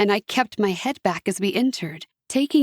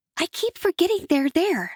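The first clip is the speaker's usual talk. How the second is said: high, secretive, confiding stage hush; 9 semitones higher than usual. A narrator reading a winged girl's remark, in a hushed voice. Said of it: "she said in a hushed voice".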